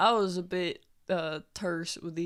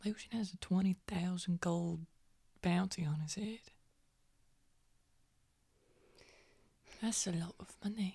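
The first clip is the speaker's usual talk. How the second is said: voice brought down a notch; 6 dB quieter than usual. A woman tells the others about the bounty on Lucian, in a lowered voice. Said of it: "She kind of like lowers her voice".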